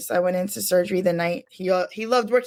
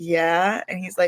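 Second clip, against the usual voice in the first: ordinary delivery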